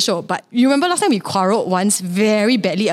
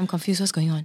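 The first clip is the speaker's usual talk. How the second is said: fading, soft, hushed, confused. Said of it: "我越讲越小声".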